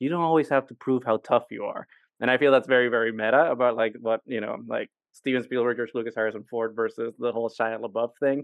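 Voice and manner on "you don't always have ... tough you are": acted, calm delivery. Retelling a film scene, quoting a character's reply, retelling a calm line. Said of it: "Indy just says very calmly".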